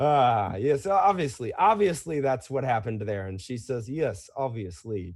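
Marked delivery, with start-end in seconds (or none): 3.9-5.1 flat, dry deadpan, low and quiet. Retelling how a woman answered Bruno, mimicking a deadpan reply. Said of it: "Just kind of like deadpan".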